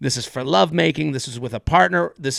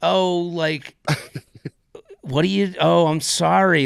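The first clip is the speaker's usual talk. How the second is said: mock sympathetic, pitying tone; 3 semitones higher than usual. Retelling how people react on hearing the job: imitating a pitying voice. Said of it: "I can see in their voice of like".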